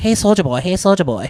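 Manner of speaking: put-on Vietnamese accent. Talking about Full Metal Jacket, mocking an old stereotype: put-on Vietnamese accent. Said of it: "do that voice more".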